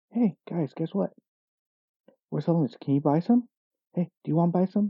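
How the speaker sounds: relaxed, easygoing, soft, calm, low-key delivery. Speaker imitates the girl who outsold everyone, imitating quiet, calm talk. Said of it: "very quietly saying things like".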